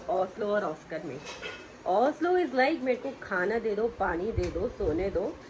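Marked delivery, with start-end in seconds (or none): none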